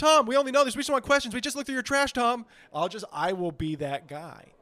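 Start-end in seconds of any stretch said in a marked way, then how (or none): 0.0-2.5 high, loud, badgering, hounding tone. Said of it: "I'll be like".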